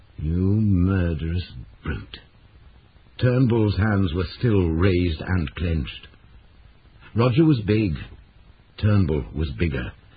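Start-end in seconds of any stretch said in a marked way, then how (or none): 0.2-2.2 low voice, slower. Roger forces himself to speak to Turnbull in a low voice. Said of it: "Roger made himself speak in a low voice".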